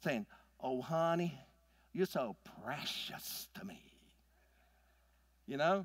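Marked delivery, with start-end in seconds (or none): 0.6-3.8 slow, put-on Southern drawl of an old woman. Imitating an old Southern mom using the word precious: Southern accent. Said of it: "you almost have to have a Southern accent to use it".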